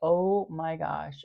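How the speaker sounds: play-acted, loud, frightened, terrified cry of alarm. Retelling hearing a cop talk about the plates: retelling a terrified exclamation. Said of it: "I was so terrified".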